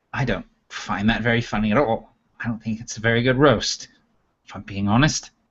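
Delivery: put-on owl character voice, muttering. Narrating a roast scene, voicing the owl's reply to the laughter; muttering under breath. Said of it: "kind of under his breath".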